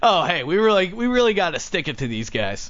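put-on sarcastic policeman voice, swooping. Joking about a police report, imitating sarcastic police. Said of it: "the policemen decide to be sarcastic in the report".

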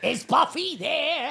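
put-on very high, loud, squawky kid voice. Speaker retelling a boy who came asking for Buffy, Gilbert Gottfried-like kid voice. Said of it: "Gilbert Gottfried in a child suit".

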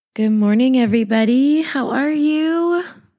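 sick, poorly voice, slightly high. A show host greets her listeners while ill, in a sick voice. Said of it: "my poor little voice".

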